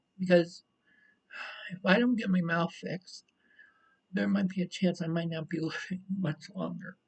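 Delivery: weeping, tearful, crying delivery. Speaker talks about an out-of-pocket cost they need help with, crying. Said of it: "I'm sorry for crying".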